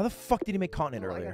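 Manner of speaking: high, yelled outburst. Asking how another player made an item: yelling. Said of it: "I'm yelling".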